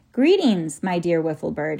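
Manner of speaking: plain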